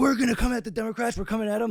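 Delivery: acted angry, fired-up rant. Retelling the Young Turks election night, imitating Cenk angry. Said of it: "when Cenk got all, like, angry".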